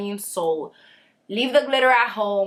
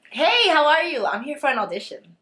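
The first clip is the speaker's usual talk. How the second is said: slightly fake, easygoing friendliness, pitched up; 6 semitones higher than usual. Demonstrating an audition greeting, the speaker says it a little fake. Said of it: "That's more like it".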